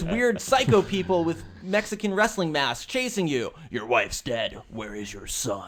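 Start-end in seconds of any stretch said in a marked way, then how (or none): 3.7-5.7 dramatic movie trailer narrator announcing voice. Summing up a game's story while watching it, dramatic movie trailer voice. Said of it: "I got the trailer voice".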